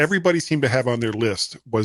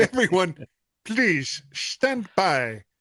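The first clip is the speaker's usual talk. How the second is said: put-on high, slow, slightly terrible German accent. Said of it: "slightly terrible German accent".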